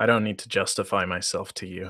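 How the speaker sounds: nearly under the breath. A character turning away to leave, speaking almost under his breath. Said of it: "says almost under his breath".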